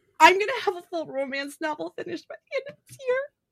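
speaking through tears. Telling viewers about a writing milestone after a long struggle, crying. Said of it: "I'm fucking crying about it".

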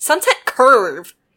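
loud, deeply offended, utterly affronted, indignant. Retelling how a group corrected her all at once; imitating an offended tone. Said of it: "in the most offended tone of voice".

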